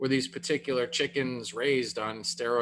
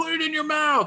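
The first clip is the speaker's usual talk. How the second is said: unhinged, shrill, very high coach-style yelling; 4 dB louder than usual. Retelling people at the table pushing steak on the gagging speaker, yelling like an insane football coach. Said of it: "like yelling like an insane football coach".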